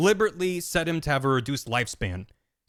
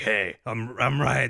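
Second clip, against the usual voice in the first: put-on gruff game-character voice; 3 semitones lower than usual. Retelling a game scene where Raiden calls Snake, mock-angry gruff Raiden voice. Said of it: "he's all like gruff and angry".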